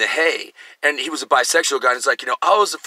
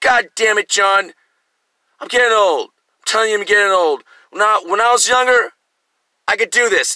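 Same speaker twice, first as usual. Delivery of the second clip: put-on drunken talk, higher and louder; 7 semitones higher, 4 dB louder than usual. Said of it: "he's already drunk when he shows up".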